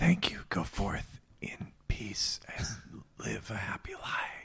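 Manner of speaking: breathy, soft, slow, unhurried whisper. Playing a character thanking the trees in a game scene: whispering to the trees. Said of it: "I whisper to the trees".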